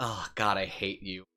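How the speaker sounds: put-on disdainful tone. Speaker acts out how she reacts to his dumb remark: imitating her disdain. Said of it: "look at me with disdain and be".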